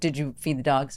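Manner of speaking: put-on stern, sharp voice. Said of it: "I'm afraid of you with that tone".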